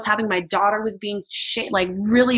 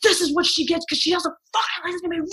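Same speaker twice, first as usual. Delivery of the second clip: mock yell, raised and high-pitched; 8 semitones higher than usual. Recounting a man yelling at her kids, retelling someone's yelling. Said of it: "he's like yelling at them".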